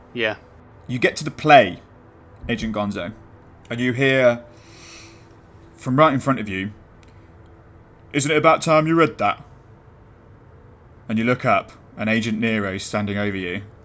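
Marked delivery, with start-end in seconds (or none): 8.1-9.4 put-on northern English accent, much higher. Game master voicing a figure standing over the player, northern English accent. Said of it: "that was a great northern accent".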